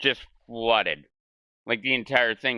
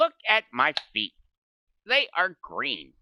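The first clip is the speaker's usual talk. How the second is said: exaggerated high swooping voice; 6 semitones higher than usual.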